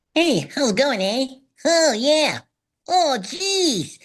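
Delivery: very high squeaky puppet voice, "jeez" stretched out. Showing a pretty good Gobo after talking about loving different voices. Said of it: "I do a pretty good Gobo".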